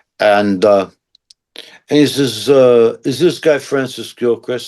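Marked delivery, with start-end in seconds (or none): 3.1-4.7 put-on mob-sounding guy with New Jersey accent. Retelling a phone call from a stranger, New Jersey accent impression. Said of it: "he sounds like a guy from Jersey".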